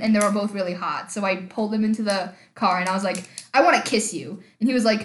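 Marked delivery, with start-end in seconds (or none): none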